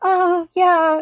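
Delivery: put-on, very embarrassed voice, high and loud. Retelling answering a doubtful driver at the drop-off, acting super embarrassed. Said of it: "It's like super embarrassed".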